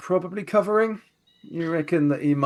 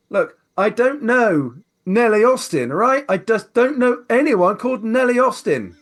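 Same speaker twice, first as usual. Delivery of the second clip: loud, agitated, heated voice, pitched up; 7 semitones higher, 5 dB louder than usual. Narrator voices a barman in a bar gone quiet: loud, agitated. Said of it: "he says it quite loudly".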